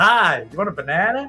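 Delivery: put-on American accent. Describing talking in one lately on the way to work: put-on american accent. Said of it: "talking an American accent".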